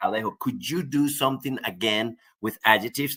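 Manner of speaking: ordinary talk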